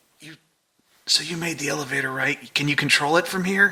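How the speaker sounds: whispering in a put-on character voice. Playing James, asking Alexis about the elevator: whispering in character. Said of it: "James is gonna whisper".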